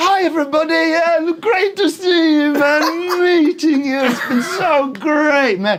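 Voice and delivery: fake English accent, very high, loud, gushing. Speaker imitates Corden greeting people on camera, in a fake English accent. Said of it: "he has an English accent. It's fake".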